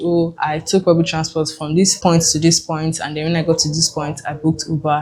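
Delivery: ordinary talk, nothing marked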